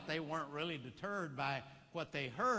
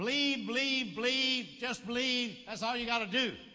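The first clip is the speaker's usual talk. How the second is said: mock heavy sarcasm, raised, pitched up, repeated; 6 semitones higher, 5 dB louder than usual. Retelling what an elderly man in a bible study said: imitating a sarcastic remark. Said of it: "sort of sarcastically, he said".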